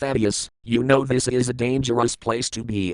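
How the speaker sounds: ordinary delivery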